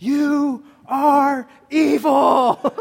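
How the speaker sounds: piercing, very high, very loud, shrill shriek. Retelling how a woman looked at a guy and screamed at him, retelling a scream. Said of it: "she looked at this guy and she just screamed".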